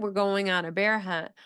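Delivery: ordinary talk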